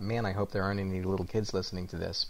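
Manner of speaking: normal talking voice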